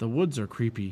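ordinary delivery

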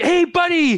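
put-on proud father voice. Retelling a scene where the kid floats the knob back: proud dad voice as Din. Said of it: "Din gets all like".

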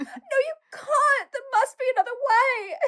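put-on very high, squeaky, twelve-year-old girl voice. Retelling a TikToker's Harry Potter scene: twelve-year-old Hermione impression. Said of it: "she's like Hermione too".

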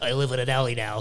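put-on New Jersey accent, rough chain-smoker's voice. Talking about The Shape of Water, doing the fish man in a Jersey smoker voice. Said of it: "Why does he talk like he's from Jersey and he smokes three packs a day?".

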